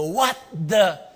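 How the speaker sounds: angry, indignant.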